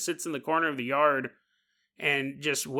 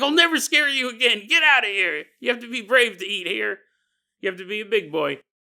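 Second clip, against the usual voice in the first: raised, high-pitched, urging yell, acted out; 6 semitones higher, 3 dB louder than usual. Retelling shooing a timid cat out of the corner, retelling own yell. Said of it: "As I'm yelling".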